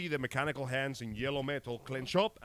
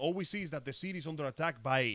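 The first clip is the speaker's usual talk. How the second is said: ordinary talk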